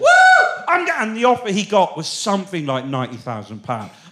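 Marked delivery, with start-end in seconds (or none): 0.0-0.9 screaming, higher and louder. Retelling a game show contestant screaming at his final two boxes: imitating a contestant screaming. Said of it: "he started screaming".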